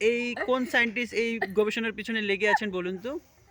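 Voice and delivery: ordinary talk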